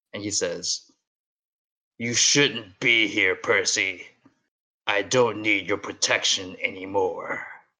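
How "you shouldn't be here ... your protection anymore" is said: low, thunderous, booming voice. The narrator voices Montana floating toward the sky, speaking to Percy, in Montana's low thunderous voice. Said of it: "is now low and thunderous".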